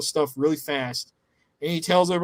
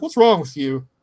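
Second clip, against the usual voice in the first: put-on dead serious, grave tone with raised voice; 6 dB louder than usual. Retelling a tense exchange, imitating Terry being very serious. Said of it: "very serious".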